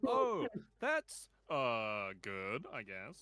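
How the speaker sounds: very loud, very slow, drawn-out, doubtful, unconvincing. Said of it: "I was like".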